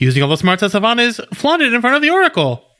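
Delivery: each phrase climbing eagerly. Imitating the other speaker's reading: imitating rising excited inflection. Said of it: "your inflection as you're reading this just keeps going up".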